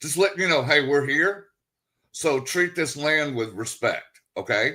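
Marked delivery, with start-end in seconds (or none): none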